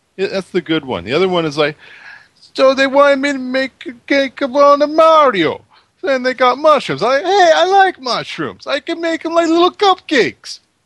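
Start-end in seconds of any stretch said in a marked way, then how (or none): 2.5-10.6 very high, loud, bad Bronx Italian accent. Describing a cake order, in a bad Italian accent. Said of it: "That was a bad Italian accent".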